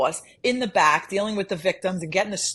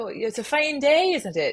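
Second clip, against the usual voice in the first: higher-pitched, put-on Irish accent throughout; 7 semitones higher than usual. Retelling how you tried to schmooze with a mumbling guy, in an irish accent. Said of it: "he's talking in like an Irish accent".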